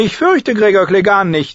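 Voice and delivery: lofty, arrogant, haughty tone, very high pitch. Sir Loras answers a warning about Sir Gregor, arrogantly. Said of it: "antwortete Sir Loras überheblich".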